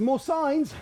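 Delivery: high, loud calling out. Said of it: "Pop Pop says".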